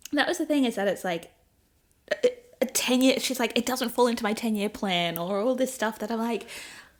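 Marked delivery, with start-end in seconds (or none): none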